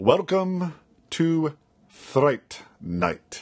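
slow, drawn-out vampire voice with trilled r. At a listener's request, a host does a Jerry Dandridge impression with a rolled R. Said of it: "do his best Jerry Dandridge impression".

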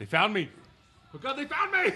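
very high, frenzied, frantic, alarmed mad-scientist voice. Repeating how someone at the table said the line, as a Doc Brown impression. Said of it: "he said it like Doc Brown".

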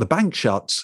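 ordinary talk, nothing marked

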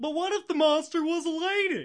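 very high, swooping, dopey executive voice. Announcing the name of a class on Bride of Frankenstein, use a dumb studio executive voice. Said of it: "in the voice of a dumb studio executive".

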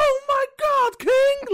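loud, high announcer voice. Speaker breaking into his go-to announcer voice while chatting, JR wrestling announcer voice. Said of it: "that's like my go-to voice".

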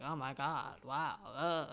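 put-on very drawn-out, slow, gushing valley girl voice. Retelling the listener's crying phone call, the speaker mimics their own reply in a valley-girl voice. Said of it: "imitation of yourself as, like, a valley girl".

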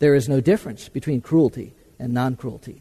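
put-on very calm, even, emotionless, passionless tone. Retelling an anecdote, quoting a young student's reply to an indian gentleman: retelling a calm, passionless remark. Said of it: "in a very calm and passionateless tone".

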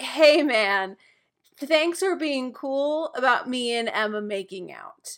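slow, pointed, passive-aggressive tone. Retelling a scene as Hook thanking a rival: imitating Hook, passive-aggressive. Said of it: "This is so passive aggressive because he's just like".

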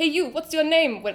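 cheerful, bad put-on Jamaican island accent. Like a jovial amusement-park figure leaning out of a bus to greet a passing visitor in a broad, friendly, exaggerated accent. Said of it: "Sorry, bad accent".

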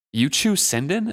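incredulous, disbelieving tone with pitch rising up. She questions a man who admits to chewing Sindon, incredulous. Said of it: "Althea asked incredulously".

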